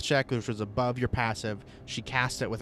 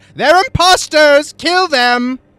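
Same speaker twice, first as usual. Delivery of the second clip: woman shouting, much higher, louder, slower; 18 dB louder than usual. The game master voices an unseen woman shouting at the party: woman's voice shouting. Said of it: "You hear a woman's voice shout".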